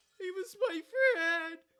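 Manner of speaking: mock crying, fake sobbing. Picturing a character on the ground in an anime scene: mock crying. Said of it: "Ange on the ground crying".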